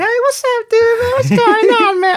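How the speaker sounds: put-on very high, unbroken, boyish kid voice. Recalling being shorter than everybody in sophomore year, in a high-pitched voice. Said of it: "I had a high pitched voice, like".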